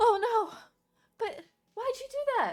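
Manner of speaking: shrill, very high, very loud halfling character voice. Running the scene, the speaker voices the halfling turning to a player: halfling character voice. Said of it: "the halfling uh, turn to you and like".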